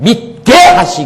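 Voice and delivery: stress landing on the syllable 게 in 믿게. Pronunciation lesson on 믿게 하시고, stressing the 게 syllable. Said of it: "가장 악센트가 어디냐면 개자에 들어있어요".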